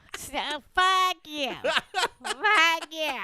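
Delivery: loud, high nasal voice squeezed through the nose. Offering the others an impression of Sean's voice, do a nasal impression of Sean. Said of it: "Do you want me to do an impression of Sean's voice?".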